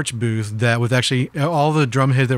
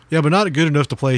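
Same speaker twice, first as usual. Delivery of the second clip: sarcastic tone, said faster; 3 semitones higher than usual. Quoting a man asked to sign a cheap drum head, retelling a sarcastic reply. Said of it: "He was being sarcastic".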